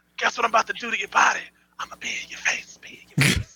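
whispered in a threatening tone. Game player speaking in character to an enemy before rolling dice, whispered threat. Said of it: "I'm whispering a threat to you".

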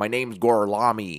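badly mangled Italian in a strong American accent. Retelling a movie scene where Brad Pitt tries to speak Italian: Brad Pitt's strong American accent in Italian. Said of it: "Very, very strong Eng-, American accent, and he's trying to pull off Italian".

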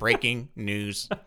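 mechanical robotic voice. Joking around on the show with Dean, robot voice. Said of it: "The robot voice".

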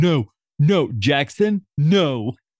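very slow, drawn-out scolding yell. Retelling a scene where Jay stops Jackson: imitating Jay yelling at a bad puppy. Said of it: "Jay's yelling at him like he's a bad puppy".

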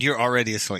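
plain

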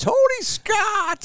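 put-on very high, loud, shrill, excited kid's shout. Retelling how a kid spotted him on arrival: imitating a kid screaming. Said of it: "a Bantam B kid from Roseau screams".

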